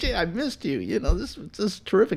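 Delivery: high, soft, gushing tone.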